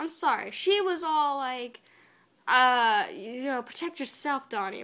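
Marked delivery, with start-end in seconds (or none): 3.6-4.8 huffy, put-out little tone. Retelling April's line to Donnie while recapping an episode: imitating April in a huff. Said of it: "in a toot".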